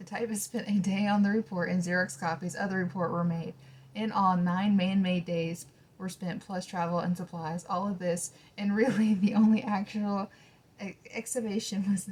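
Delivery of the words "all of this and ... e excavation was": giggly, broken-up, laughing through the words. Reading a report aloud and cracking up: laughing while talking. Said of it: "sorry, I'm laughing too much".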